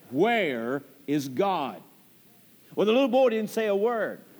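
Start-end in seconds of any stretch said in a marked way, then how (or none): 0.1-1.8 play-acted stern preacher voice, low and probing. Storyteller acting out a preacher questioning a little boy, retelling a stern question. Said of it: "with a stern voice".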